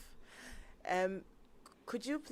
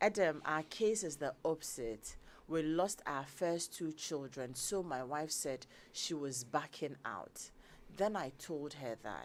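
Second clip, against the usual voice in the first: usual speaking voice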